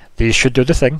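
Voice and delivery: put-on dwarf character voice with Scottish accent. Voicing a dwarf who fits bracers on a player's wrists: Scottish-accented dwarf voice. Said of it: "'cause it's really Scottish".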